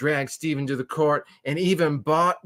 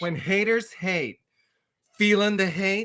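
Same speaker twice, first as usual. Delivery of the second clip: put-on campy, flamboyant voice; 6 semitones higher than usual.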